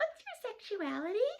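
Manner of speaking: strained, tense, uptight, very high voice. Retelling a woman who came up and asked a question, imitating an uptight woman's voice. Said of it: "Like just in that voice".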